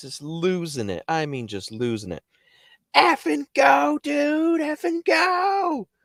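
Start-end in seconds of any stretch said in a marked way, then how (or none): 2.9-5.8 mock frantic scream, very high, slow, drawn-out. Speaker retells a man in the car screaming at them: retelling someone screaming. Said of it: "And he's screaming".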